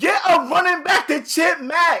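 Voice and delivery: very high-pitched, shrill, loud screaming. Retelling watching the game on TV: imitating own screaming at TV. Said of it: "I was screaming at the T V like".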